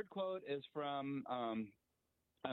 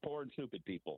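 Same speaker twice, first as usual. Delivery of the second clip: ordinary talk, nothing marked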